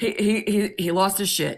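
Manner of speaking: ordinary talk, nothing marked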